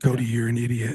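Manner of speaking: close-mic radio announcer voice. Demonstrating getting really close to the mic, in an NPR voice. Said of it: "my N P R voice".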